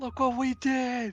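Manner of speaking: shrill, very loud, high, full-throated yell. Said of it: "Just yell".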